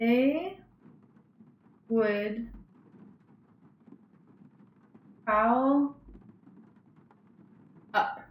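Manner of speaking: very slow, deliberate, each word stretched. Speaker tests whether the words blend into each other, talking really slow. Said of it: "I'm talking really slow".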